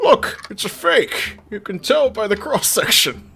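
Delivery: muffled voice, as if spoken through a hand. Doing a bad Sean Connery impression during a game. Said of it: "that's my bad Sean Connery".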